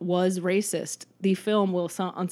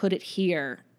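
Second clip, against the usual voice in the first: put-on condescending tone, slower. Describing a movie scene, speaker acts out a player's remark to a fan, mock-condescending. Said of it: "Dottie kind of condescendingly says like".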